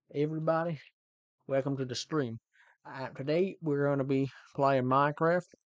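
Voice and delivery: Texan accent. Trying out voices while opening a stream, in a Texan accent. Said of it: "That was a Texan".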